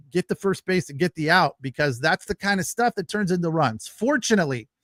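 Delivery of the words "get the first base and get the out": plain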